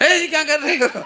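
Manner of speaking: startled, angry shout, yelled up high.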